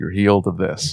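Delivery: put-on calm, soothing voice. Imitating a healer from a soothing video: imitating a healer's calming voice. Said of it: "this really, like, calming voice".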